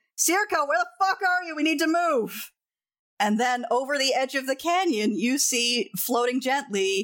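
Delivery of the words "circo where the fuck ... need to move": high, frantic, urgent shouted yell. Narrating a scene, voicing Kieran as he calls out to Circo, yelling. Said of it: "Kieran immediately starts yelling".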